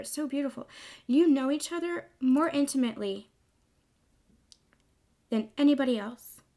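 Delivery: choked-up, emotional voice catching. Speaking to listeners about sacred partners, choked up with emotion. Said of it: "I'm getting so choked up here".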